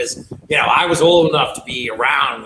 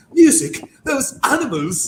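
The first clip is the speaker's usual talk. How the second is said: put-on poor English accent, pitched up; 11 semitones higher than usual. Describing a Dracula film scene and Keanu's reply: Keanu's bad English accent. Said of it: "Keanu trying to do a English accent".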